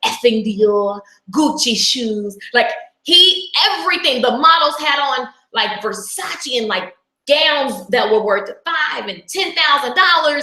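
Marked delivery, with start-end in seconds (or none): 0.0-2.4 thick, laid-on, put-on English accent. Retelling what a mentor said on stage: imitating a strong English accent. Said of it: "so he's got that accent, and it's so strong".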